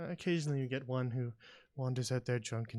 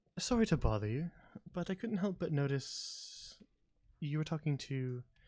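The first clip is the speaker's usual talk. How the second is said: voice lowered a little; 2 semitones higher than usual. A character approaching someone who was talking, voice lowered a little. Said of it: "she lowers her voice a little bit. She doesn't speak uh, very loudly".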